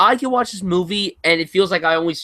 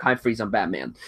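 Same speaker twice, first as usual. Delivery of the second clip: flat, emotionless delivery with zero emotion; 9 semitones lower, 6 dB quieter than usual. Doing an actor's Batman line, said to have no emotion: flat George Clooney impression. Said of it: "He doesn't he has no emotion. He's just like".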